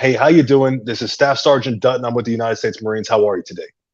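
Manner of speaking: very direct, loud. Demonstrating how he tells his Marines to speak to parents on the phone, very direct, loud. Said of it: "very direct, loud".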